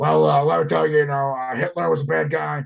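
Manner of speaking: rough, creaky, raspy voice with stumbling pauses. Retelling an interview moment about to cut to commercial, imitating Alex Jones. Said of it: "and then Alex Jones is like".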